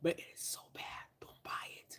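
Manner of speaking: soft, unvoiced whisper. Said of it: "Can you hear me whispering?".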